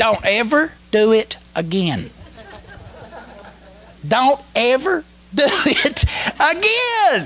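put-on strong rural Alabama accent. Retelling what the most pastoral of the crew said that day, alabama redneck accent. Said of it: "He sounded like a good old Alabama redneck".

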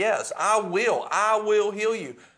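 mock shout, high, slow and drawn out. Acting out God answering prayers, shouting from heaven. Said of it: "he's shouting".

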